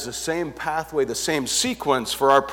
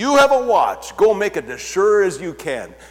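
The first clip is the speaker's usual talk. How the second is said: high, swooping, dripping, scornful put-on sarcasm; 5 semitones higher, 5 dB louder than usual. Retelling the governor answering those asking for authorization, in a mocking tone. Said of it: "almost in a mocking tone".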